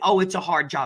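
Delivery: plain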